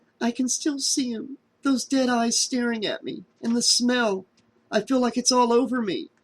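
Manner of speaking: hysterical whisper. Reading a story aloud, a trapped character speaks: hysterical whisper. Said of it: "whispered hysterically".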